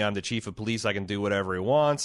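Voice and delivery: ordinary talk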